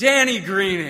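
loud, booming calling voice. Retelling a man at a door who seemed to know him, imitating a big voice. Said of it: "he just says in this big voice".

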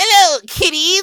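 cackling ghoul host voice. Asked for his best Crypt Keeper intro, the speaker opens the episode in Crypt Keeper voice. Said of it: "give me your best Crypt Keeper laugh intro".

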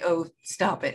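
mock grand theatrical diva voice. Retelling a bow to a standing cast: imitating a grand dame of the theater. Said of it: "grand dame of the theater".

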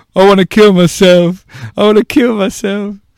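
put-on very high-pitched, loud, sobbing childish wail. Recalling sitting on the top step as a child, retelling crying as a child.

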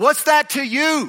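very high scream, top of the lungs. Speaking to listeners, acting out Jesus screaming at the top of his lungs. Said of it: "screaming at the top of his lungs".

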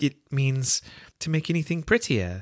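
doubtful, unsure tone. A girl answers a creature's question about a word, doubtful. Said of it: "said Alice doubtfully".

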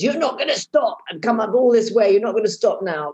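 play-acted, pushy, firm, insistent tone. Retelling how her husband shouted at her during the run: imitating husband shouting. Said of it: "my husband shouted at me and says".

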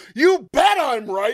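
high, loud, all-out enraged screaming. Retelling Boone's outburst at the home plate ump, mock-screaming as him. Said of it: "He's just screaming at the end".

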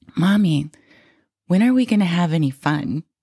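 put-on sweet little girl voice. Retelling a young daughter's question about fun: imitating a daughter's sweet voice. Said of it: "who has the sweetest voice".

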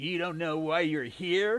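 scornful, mocking, taunting echo. [name] repeats Jimmy's words back at him across the table, mocking. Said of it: "[name] mocked him".

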